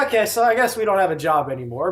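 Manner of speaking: normal talking voice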